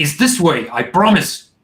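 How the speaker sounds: angry, irritated, insistent delivery. Acting out the guide who gets angry when questioned, acting out an angry guide. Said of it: "he gets angry when you're questioning him".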